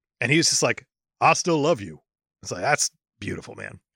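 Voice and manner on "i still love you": ordinary delivery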